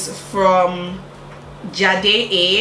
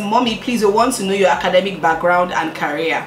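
ordinary talk

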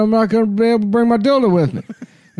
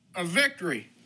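very quiet, hushed single word; 4 semitones lower, 14 dB quieter than usual. Showing others the word practiced last night: Joe Biden impression. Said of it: "just the word victory I can do".

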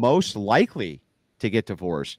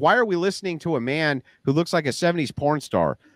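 ordinary talk

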